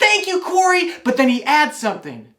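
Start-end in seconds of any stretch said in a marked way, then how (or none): 0.0-0.9 put-on very high, loud, thrilled toddler yell. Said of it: "And Stanley says".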